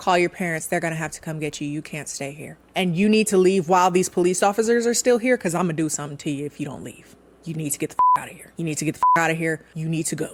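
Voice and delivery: mock quick delivery. Retelling a husband's words to his wife, retelling quick words. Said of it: "he said with the quickness".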